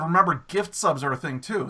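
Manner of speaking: usual speaking voice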